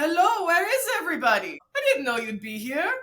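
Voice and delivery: put-on thick Austrian accent, loud and swooping. Quoting your Austrian dad greeting the family in a restaurant, thick Austrian accent. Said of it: "in his thick accent".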